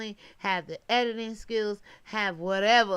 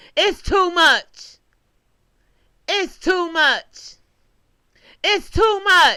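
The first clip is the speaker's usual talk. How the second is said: very high, loud, shrill, belted-out put-on voice; 9 semitones higher, 12 dB louder than usual. Addressing YouTube viewers in a borrowed voice: Anthony Banks voice. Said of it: "in my Anthony Banks voice".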